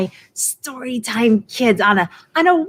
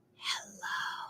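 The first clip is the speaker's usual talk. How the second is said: barely-there, very quiet, breathy whisper; 23 dB quieter than usual. Leading a group rhyme game, saying hello as quiet as possible. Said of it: "Let's say hello as quiet as we can".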